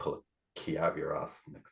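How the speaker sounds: very low, hushed, quiet under-breath mutter. A player's character gathers their things and mutters under their breath. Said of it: "muttering under my breath".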